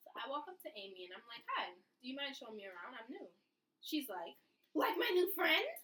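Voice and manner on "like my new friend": very shrill, super high-pitched, very loud squeak. Quoting how Amy answered, in Amy's super high-pitched voice. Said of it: "This is her voice. She has a super high pitched voice".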